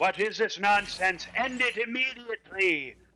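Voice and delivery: angry shout. Game master narrates the king shouting above the crowd: king shouting above the crowd. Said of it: "you hear the king shout above the crowd".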